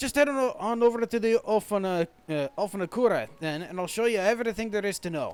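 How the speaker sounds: thick, heavy, very broad Scottish brogue. Voicing a character in Kogane, in a very Scottish accent. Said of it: "I gave this guy a very, very Scottish accent".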